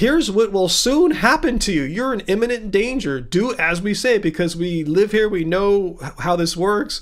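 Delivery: plain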